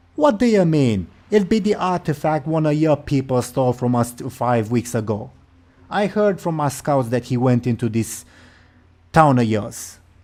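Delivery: affronted, put-out troll witch voice. Voicing the troll lady answering a question about the artifact, offended troll lady. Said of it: "She seems a bit offended at that".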